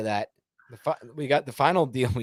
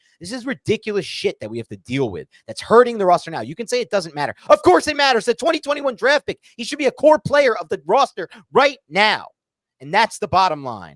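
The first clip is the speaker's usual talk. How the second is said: loud, heated, very high-pitched angry rant; 10 semitones higher, 8 dB louder than usual. Ranting about a draft pick that is hurting the roster: angry rant. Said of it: "And I'm back to being angry".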